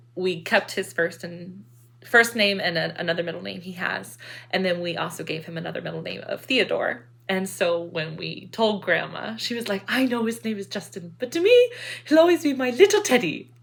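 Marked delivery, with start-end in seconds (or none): 9.9-13.4 sing-song, put-on attempted Dutch accent. Quoting Grandma on hearing the baby's name, imitating Grandma's Dutch accent. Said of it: "hears me doing this accent".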